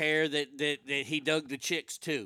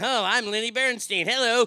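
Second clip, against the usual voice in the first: high, loud, derisive ridiculing voice; 7 semitones higher, 5 dB louder than usual. Complaining about sitting through the movie: mocking the movie's way of talking. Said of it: "put up with this".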